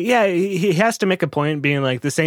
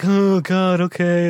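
play-acted barely-awake, groggy, sleepy voice; 5 semitones higher than usual. Mocking a sleepy musician forced to make albums, imitating a sleepy voice. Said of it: "He's just like so fucking sleepy".

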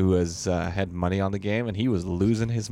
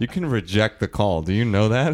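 plain

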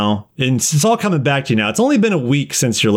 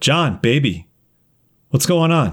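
put-on woman's voice, slower. Retelling a nightmare where a woman wakes the dreamer, doing Sovereign's voice. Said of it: "Sovereign's voice going".

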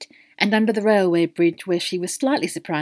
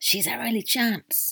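urgent, hushed pleading half-whisper under the breath; 4 semitones higher, 5 dB quieter than usual. A man, overheard by Queenie, half-whispers to his companion: half-whispered. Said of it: "Queenie heard him whisper".

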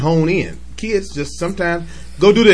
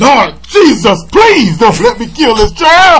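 shrill, very loud, high demonic cry; 7 semitones higher, 9 dB louder than usual. Recalling a funny bit, doing the mama's voice turned demonic. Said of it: "his mama turned into the demonic voice".

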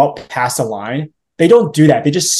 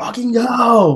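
acted-out, high, furious yelling scream; 9 semitones higher than usual. Retelling being stuck behind a car that wouldn't move: imitating screaming at a driver. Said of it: "I was just screaming".

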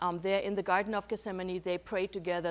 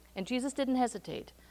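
usual speaking voice

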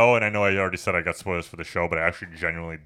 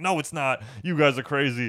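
high-pitched, dismissive voice; 8 semitones higher than usual. Recapping a movie character who denies the doll is alive, mock-dismissive denial. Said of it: "she was like".

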